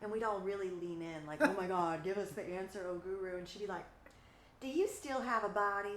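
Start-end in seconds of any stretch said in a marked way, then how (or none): 4.6-6.0 put-on Texan accent. Speaker quotes a woman answering the group leaning in, in a texan accent. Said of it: "in her Texan accent".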